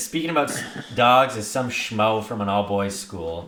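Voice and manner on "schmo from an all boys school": ordinary talk, nothing marked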